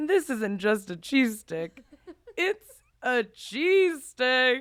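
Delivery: loud, very slow, silly, goofy nutty voice. Recalling performing a bit at lunch to get laughs, nutty voice. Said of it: "I would do the nutty voice".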